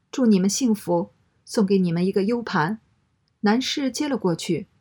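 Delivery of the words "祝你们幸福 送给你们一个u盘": ordinary delivery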